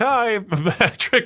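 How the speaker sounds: very high put-on lady voice. Retelling how a driver was expected to greet a drummer: imitating a lady greeting someone. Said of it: "some, like, lady to come be like".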